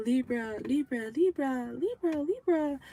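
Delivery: high, drawn-out, insistent, repeated, annoying calling voice. Addressing Libras, a speaker imitates someone calling them; imitating high-pitched annoying voice. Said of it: "this person has like a high pitched voice".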